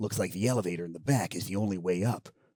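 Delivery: very quiet, hushed, in-character soldier radio voice. Speaker acting out a codec conversation from a video game, Snake impression. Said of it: "That's a terrible Colonel voice".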